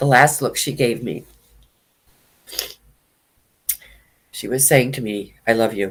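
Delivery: tearful speech, crying while talking. Speaker urges listeners to let emotions out, then recalls a last look, crying while talking. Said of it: "I was really going to try not to cry".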